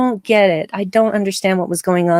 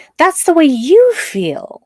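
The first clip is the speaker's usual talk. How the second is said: high, slow accusing voice. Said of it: "what Tilly said to her".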